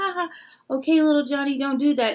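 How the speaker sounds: light, high, funny, playful, non-serious voice. Showing how a parent scolds a child, funny playful voice. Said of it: "change your voice from the funny".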